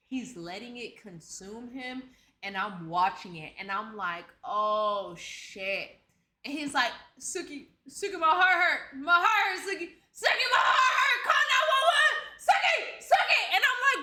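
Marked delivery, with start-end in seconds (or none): 7.2-13.4 frantic, pleading, high, rising panicked yell, repeated. Retelling a high man calling out to Suki, imitating someone yelling. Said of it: "bro, stop yelling".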